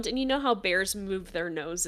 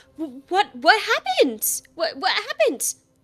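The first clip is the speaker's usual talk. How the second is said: very high, loud, stammering squirrel voice; 10 semitones higher, 4 dB louder than usual. Voicing Teresa, head of the HOA squirrels, running up: voicing Teresa the squirrel. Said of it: "She has her pearls on and she goes".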